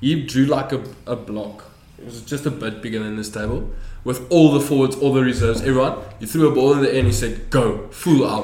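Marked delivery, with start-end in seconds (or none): 7.5-8.4 acted-out angry, pissed-off delivery. Retelling what Meneer Stoffel shouted at rugby practice: imitating angry Meneer Stoffel. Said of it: "he got so pissed off at us".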